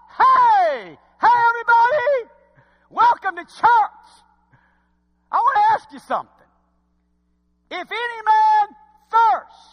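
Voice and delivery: very high, loud calling-out cry. Showing how a preacher welcomes everybody to church: crying out. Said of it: "Do I sound like I'm crying out?".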